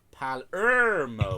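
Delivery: Palermo with stress on the middle syllable ler. Joking about how to say a place name: stress on ler in Palermo. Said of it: "Emphasis on the middle syllable".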